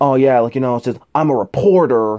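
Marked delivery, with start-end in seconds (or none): 1.1-2.2 put-on slurred, drunk-sounding voice. Imitating an actor's trailer line: Tom Hardy slurring words. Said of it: "he's slurring his words, almost like he's drunk".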